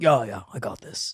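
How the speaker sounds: low, soft macho voice. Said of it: "And they're like".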